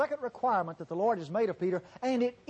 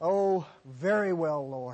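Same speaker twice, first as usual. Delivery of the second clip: low, slow, reluctant, defeated, resigned tone; 6 semitones lower than usual. Voicing Peter's reply to Jesus, mock-resigned as Peter. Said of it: "You can almost hear the resignation in Peter's voice".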